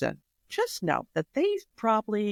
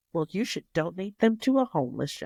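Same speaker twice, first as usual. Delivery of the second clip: fast, cheeky, sassy put-on salesman voice. Retelling what the salesman told the speaker in the store: imitating sassy salesman. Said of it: "sassy Mister Salesman looks at me and goes".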